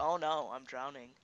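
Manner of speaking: dripping, heavy sarcasm with pretend distress. Imitating another player's line about drowning: imitating a sarcastic tone. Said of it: "You said that s-, so sarcastic, like".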